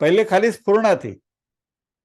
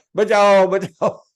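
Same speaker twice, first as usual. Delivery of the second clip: loud shout. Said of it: "ये भी चिल्ला रहा है".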